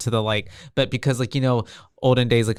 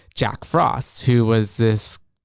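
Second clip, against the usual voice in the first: ordinary talk, nothing marked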